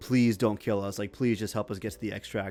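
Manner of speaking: earnest, pleading, imploring begging tone. Retelling what two cornered players in a game said: imitating begging.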